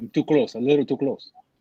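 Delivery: sounds like a Russian speaker. Adjusting how close they sit while others listen, sounding russian. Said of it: "Now you sound like a Russian".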